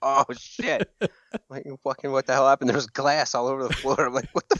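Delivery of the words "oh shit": mock scream, much higher. Recounting glass shattering while a friend played guitar, speaker retells his scream. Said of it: "he's screaming".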